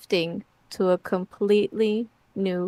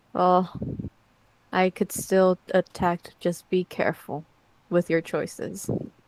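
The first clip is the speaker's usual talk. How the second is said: eerie, half-whispered stage whisper. Voicing a shadow that warns the players: half-whispering. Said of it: "and it whispers".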